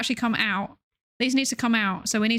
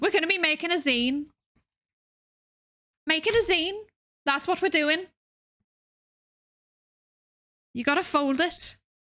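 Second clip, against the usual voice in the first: poor put-on Scouse accent, pitched up; 6 semitones higher than usual. Addressing a group that includes Scouse listeners, in a bad Scouse accent. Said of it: "doing a Scouse accent".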